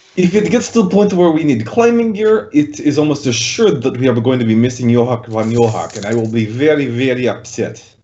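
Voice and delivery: heavy, thick, laid-on put-on Russian accent. Player in a tabletop game answers about climbing gear, in a thick Russian accent. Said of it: "If you're gonna do a Russian accent".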